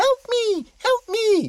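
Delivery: put-on very high, loud shrieking scream.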